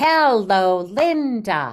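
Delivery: loud call with one word stretched long. Showing a class how to use different voices when saying names: a shouting voice. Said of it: "I used a shouting voice".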